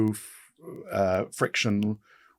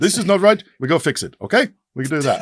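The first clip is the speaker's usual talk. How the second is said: put-on Austrian accent, loud and high; 6 semitones higher, 7 dB louder than usual. Doing the accent of the late great Niki Lauda: Niki Lauda accent. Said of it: "can I do the accent?".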